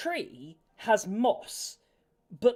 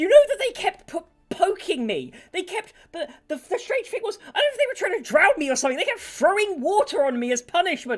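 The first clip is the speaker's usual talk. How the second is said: put-on furious posh-accented rant, high and loud; 9 semitones higher, 6 dB louder than usual. Voicing an angry tiny creature ranting about people: angry posh ranting. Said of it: "getting all angry as it's ranting".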